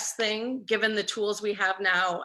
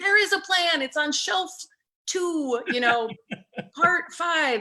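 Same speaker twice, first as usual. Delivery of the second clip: mock shouting, high-pitched yell; 8 semitones higher, 4 dB louder than usual. Retelling yelling at the television while the media reports: imitating own yelling. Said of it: "I'm yelling at the television going".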